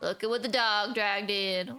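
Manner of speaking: put-on skeleton voice. Voicing the skeleton bartender Aurelius greeting a newcomer: Aurelius accent voice. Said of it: "I don't even remember what voice I gave him".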